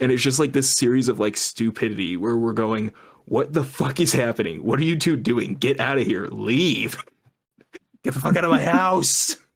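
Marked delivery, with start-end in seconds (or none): 3.3-9.4 acted-out yelling, pitched higher. Speaker retells yelling at two people standing outside the house, retelling a yell. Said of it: "we're just yelling at them".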